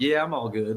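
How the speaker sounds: put-on slight country twang accent. Retelling what a player said when meeting him: imitating a slight country accent. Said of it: "he's got a little, uh, country accent to it".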